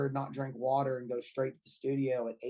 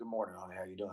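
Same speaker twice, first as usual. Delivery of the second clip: way-down, very low, soft just-out-of-bed voice; 6 semitones lower, 8 dB quieter than usual. Describing the first words after getting out of bed, in a very low morning voice. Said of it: "Like way down there".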